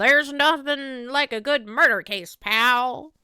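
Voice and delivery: put-on loud, slow, belted Southern cowboy accent. Imagining what the detective would say about a murder case: Gumshoe impression. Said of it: "my Maya doing an impression of Gumshoe voice".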